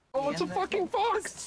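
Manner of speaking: shrill, high, loud, frantic freak-out. A character suddenly noticing a fox, freaking out. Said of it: "Chill out about the fox!".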